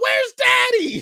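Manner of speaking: put-on very high, loud heckling child's yell. Comic retelling how a kid yelled out during another comic's set, imitating a kid yelling. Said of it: "he yells out".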